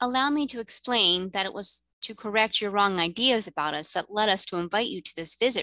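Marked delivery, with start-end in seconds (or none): none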